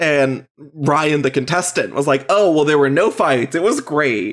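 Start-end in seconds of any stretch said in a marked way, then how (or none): 2.3-4.3 put-on facetious manner. Retelling what the contestant answered when asked how it went: retelling a facetious reply. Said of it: "he was very facetious".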